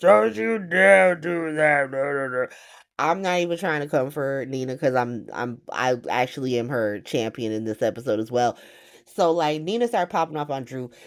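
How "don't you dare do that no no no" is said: booming, slow, heavy-footed delivery. Recapping an episode, doing Nina's Cookie Monster voice toward Drew. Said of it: "here comes Nina with her Cookie Monster voice".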